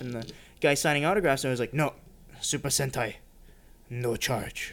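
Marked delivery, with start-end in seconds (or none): 1.7-4.7 put-on whispered, slow, breathy, wise old samurai voice. Retelling what the autograph signer said: imitating an old wise samurai voice. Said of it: "he sounded exactly like the old wise samurai".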